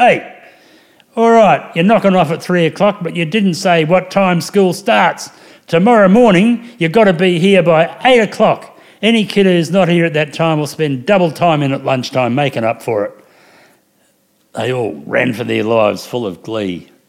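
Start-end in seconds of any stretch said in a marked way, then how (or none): 0.0-13.2 big booming voice, raised high and loud. Retelling calling out from the veranda to kids rushing for the door, booming voice. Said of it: "in my booming voice and I said".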